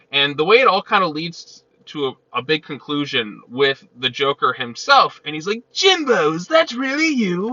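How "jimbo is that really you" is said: very high, excited voice with swooping pitch. Retelling a comic scene where the Joker greets Gordon: Mark Hamill Joker voice. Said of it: "I gotta do my Mark Hamill thing".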